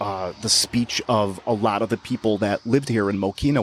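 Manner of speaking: usual speaking voice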